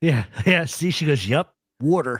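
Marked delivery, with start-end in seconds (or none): 1.3-2.2 put-on South Philly accent, lower. Quoting what a woman says, South Philly accent. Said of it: "That's a South Philly accent".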